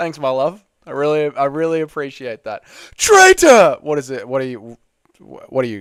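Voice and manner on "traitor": piercing, shrill, full-volume yell. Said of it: "Anakin yelling at Obi-Wan?".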